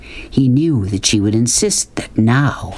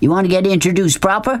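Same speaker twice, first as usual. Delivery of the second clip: sneering, mocking, pitched-up tone; 8 semitones higher than usual. Narrator reading one character mocking another, in a mocking voice. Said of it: "Said Beauchamp in a mocking voice".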